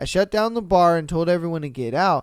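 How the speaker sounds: plain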